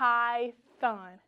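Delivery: elongated, drawn-out word. Stretching a word so listeners can hear the th sound: stretched-out word. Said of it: "I want you to stretch it".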